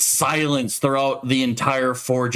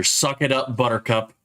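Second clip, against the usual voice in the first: plain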